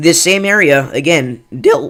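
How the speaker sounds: voice breaking, a bit loud. Storm reporter giving a new severe thunderstorm warning, with a voice crack. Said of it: "that voice crack was so bad".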